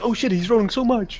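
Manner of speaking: mock scared, frightened voice. Imitating the players reacting to many dice rolls: imitating scared players. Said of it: "you guys being scared, like".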